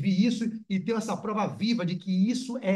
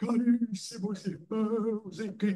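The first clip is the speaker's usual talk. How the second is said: very slow, stagey, theatrical put-on voice, drawn out; 2 semitones higher, 5 dB quieter than usual. Playing a fake medium who channels a spirit, Bezerra de Menezes voice. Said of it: "Estou inventando a voz dele aqui, só teatralizando".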